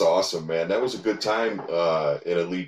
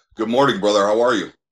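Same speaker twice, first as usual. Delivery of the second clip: imposing, intimidating voice, louder; 3 semitones higher, 6 dB louder than usual. Greeting the other speaker after being taken as a caller: intimidating voice. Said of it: "that voice is so intimidating".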